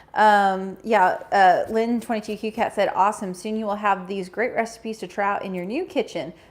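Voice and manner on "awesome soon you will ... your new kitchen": ordinary talk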